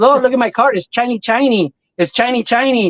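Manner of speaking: put-on Mexican accent. Retelling a friend's son repeating a line from a video; put-on accent. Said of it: "he makes that accent".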